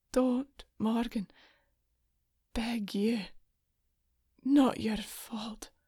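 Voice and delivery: slow, strained, effortful pleading dying voice. A man who took a blade for her speaks to the weeping woman, pleading with great effort. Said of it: "Cullen pleaded with great effort".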